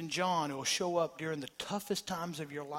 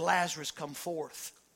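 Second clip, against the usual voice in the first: ordinary talk, nothing marked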